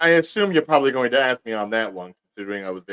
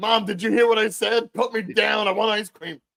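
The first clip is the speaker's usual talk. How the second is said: put-on high child's voice, hollering; 9 semitones higher than usual. Telling how one man yelled at another, the speaker acts out the yell. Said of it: "He's yelling at him like".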